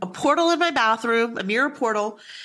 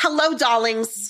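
heavy acted Italian-American accent. Retelling a psychic's TikTok live greeting: Matt Frazier's thick Jersey Italian accent. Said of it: "the thickest, most incredible Jersey accent, Italian accent".

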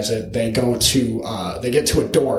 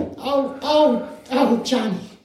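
drawn-out, very high, slow worried mother voice; 14 semitones higher than usual. Picturing watching the stunts, as a worried mother: put-on worried mother voice. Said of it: "you're just like the worried mother".

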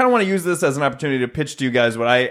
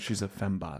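quiet, loving put-on voice, lower and quieter; 6 semitones lower, 15 dB quieter than usual. Playing a funeral scene dressed in costume, speaking quietly, lovingly as Austin Powers. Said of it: "quietly, almost lovingly saying".

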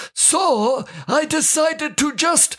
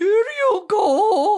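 high, stretched-out put-on woman's voice; 5 semitones higher than usual. Retelling disguising their voice while handing something under a stall, fake lady voice. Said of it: "I tried to change my voice to sound like a lady".

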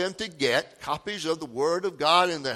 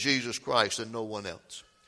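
normal talking voice

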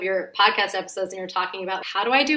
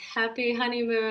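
joking tone, much quieter; 2 semitones higher, 5 dB quieter than usual. Recalling arriving at the Navy Lodge after marrying, quoting her husband: retelling husband's joking line. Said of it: "my husband jokingly was like".

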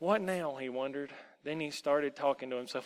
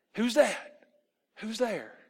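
shocked, startled, high, raised cry of alarm; 7 semitones higher, 6 dB louder than usual. A lost boy hears a mocking voice and jumps up, shocked. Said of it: "The boy jumped up in shock".

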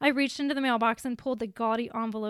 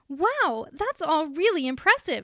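loud, bright, sing-song, cheery robotic autopilot voice; 5 semitones higher, 5 dB louder than usual. A school contact answers an applicant asking for more money; cheery robot on autopilot. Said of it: "Stacy said like a cheery robot on autopilot".

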